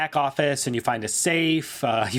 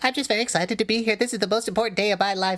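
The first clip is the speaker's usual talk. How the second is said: sheepish, shy, high-pitched, rushed delivery; 7 semitones higher than usual. Betsy Pears greets her opponent Chad, sheepish Betsy Pears voice. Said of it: "Very sheepish, / Very sheepish, big owl-like eyes behind glasses, / and you're playing against a woman named [name] Pears. / Very sheepish".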